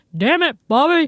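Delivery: booming, very loud, high-pitched outburst. Retelling a husband's joke line: imitating husband's King of the Hill voice. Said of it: "he does it so much better".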